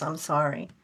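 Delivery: quiet, hushed, subdued low-key tone. Retelling a voice heard on a ghost box: imitating a quiet apology. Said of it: "then he got real quiet and he goes".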